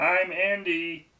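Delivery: squeaky, very high-pitched voice. Retelling what a friend will ask next time: imitating Andy. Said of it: "It's basically Ray Romano".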